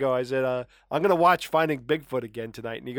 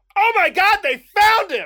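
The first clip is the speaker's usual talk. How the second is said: very loud, shrill, high-pitched exclamation; 9 dB louder than usual. Retelling how their son woke them up, the speaker is retelling a loud exclamation. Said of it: "he very loudly goes".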